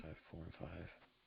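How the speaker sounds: very quiet muttered under-breath whisper. Making football picks, the speaker works out numbers, whispering under breath. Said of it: "Can you stop whispering math under your breath?".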